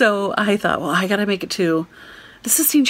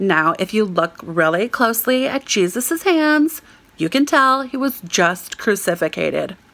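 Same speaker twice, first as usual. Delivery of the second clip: put-on American accent in a tour-guide style. Retelling overhearing a tour guide leading a tour: American accent. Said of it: "I hear this American voice say".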